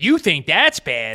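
loud, booming cartoon-dad voice. Responding to someone's gross story, quoting a cartoon, in a Peter Griffin impression. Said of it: "As Peter Griffin from Family Guy would say".

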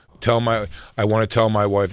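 ordinary delivery

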